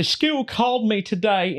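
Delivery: put-on hillbilly woman voice. Telling others about a TikTok video of a woman, hillbilly lady impression. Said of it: "it's like a hillbilly lady".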